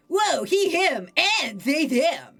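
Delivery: loud, full surfer dude voice with big energy. Voicing Ocean answering the interviewer's questions, in an Ocean surfer boy voice. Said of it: "I'm gonna give Ocean like a surfer boy voice".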